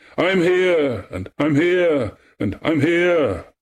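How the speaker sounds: calling out eagerly in a high voice. Echo repeats Narcissus's call back to him, crying out. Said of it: "she cried".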